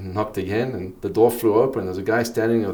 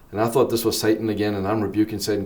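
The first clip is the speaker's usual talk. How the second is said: ordinary delivery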